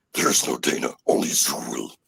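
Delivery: growling voice. Retelling what they said as a young kid after Ghostbusters: growling voice. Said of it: "you know how I learned how to growl".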